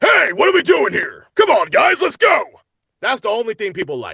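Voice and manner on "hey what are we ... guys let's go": gruffed-up tough voice, very loud. Voice actor demonstrates the voice people keep casting them for, gruffed-up voice. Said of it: "I just gruff it up a little bit".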